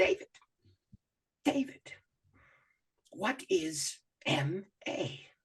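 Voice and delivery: put-on Ugandan accent, very slow, breathy, near a whisper. Retelling how a storyteller paused mid-story to ask him, in a put-on Ugandan accent. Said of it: "with his Ugandan accent".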